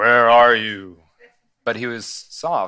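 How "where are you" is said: thunderous, very loud, booming call. Speaker shows how God did not call out the question: loud and booming. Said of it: "loud and booming".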